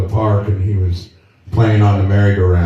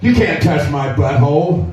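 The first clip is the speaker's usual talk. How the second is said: put-on child yelling as loud as possible, high; 7 semitones higher than usual. Retelling a granddaughter's reply in a store: imitating a child shouting. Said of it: "in the loudest voice she could muster".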